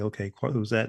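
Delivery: ordinary delivery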